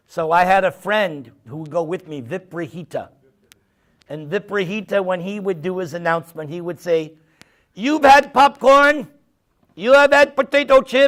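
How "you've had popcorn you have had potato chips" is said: put-on loud, heavy Latin accent. Retelling a friend's announcement to a crowd, imitating Viprahita's heavy Latin accent. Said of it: "he had a very heavy Latin accent".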